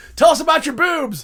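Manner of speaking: shrill, high-pitched, very loud shout. Recalling a buddy shouting a question in a little room: retelling a buddy's shout.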